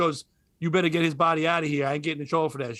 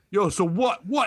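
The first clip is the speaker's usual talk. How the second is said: aggressive, confrontational, challenging yell; 3 semitones higher than usual. Retelling how a guy from another school came to practice: imitating someone yelling. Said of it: "He's all yelling".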